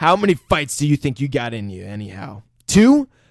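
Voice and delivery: put-on intimidating voice. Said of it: "I'm saying Marcellus Wallace".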